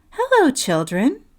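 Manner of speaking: sweetly spoken. Reading a story aloud, someone greets the children in a sweet voice. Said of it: "someone said in a sweet voice".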